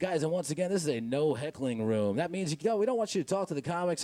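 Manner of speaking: cheesy radio DJ announcer voice. Imitating the club's sound booth announcer before the host: cheesy radio DJ voice. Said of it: "in a very cheesy, like, ninety-five five voice".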